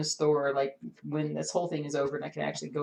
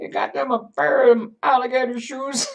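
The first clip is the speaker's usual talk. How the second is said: put-on old-person voice, higher and louder; 9 semitones higher, 10 dB louder than usual. Speaker replays something they said earlier, in an old person voice. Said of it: "I sounded like some old person".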